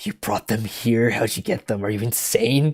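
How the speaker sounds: soft, hissed voice under the breath. Retelling Mickey's line to Dancer, Mickey hissing. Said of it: "Mickey like hisses".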